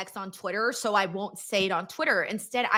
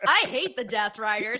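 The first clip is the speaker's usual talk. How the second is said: put-on smile in the voice. Joking that a harsh opinion sounds fine said aloud: put-on smiling delivery. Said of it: "but I said it with a smile".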